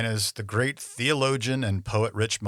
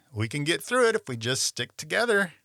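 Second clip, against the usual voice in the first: dripping sarcasm, sing-song and pitched up; 6 semitones higher than usual. Retelling what was said to his wife when things went wrong: imitating own sarcastic remark. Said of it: "I would look at her and sarcastically say".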